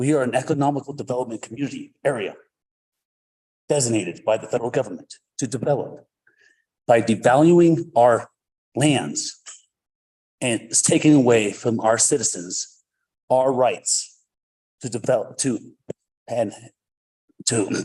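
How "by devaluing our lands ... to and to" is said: choked up, halting, words breaking apart mid-phrase. A veteran speaking up for citizens' rights to develop, emotional. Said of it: "I'm emotional with that too as well".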